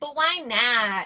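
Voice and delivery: put-on whiny voice. Retelling a movie scene where Birch refuses to give the part: whiny voice imitating Birch. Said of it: "And he's a little whiny baby".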